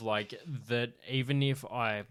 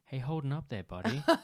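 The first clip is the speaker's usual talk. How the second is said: put-on American accent; 2 semitones higher than usual. Imitating an actor who is condescending in every role, in a put-on american voice. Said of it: "it's an American voice".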